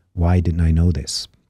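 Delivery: ordinary delivery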